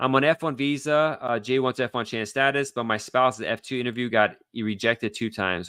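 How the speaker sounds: normal talking voice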